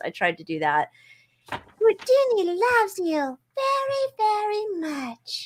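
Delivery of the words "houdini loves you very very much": very high, very slow, drawn-out pet voice. Giving a pet a voice: Elmo voice. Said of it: "I was trying to do Elmo for Houdini's voice".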